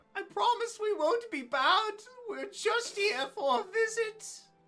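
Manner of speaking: tiny, begging goblin voice, very high and slow. Voicing a tiny goblin in armor pleading with someone: pleading goblin voice. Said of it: "with, like, pleading eyes".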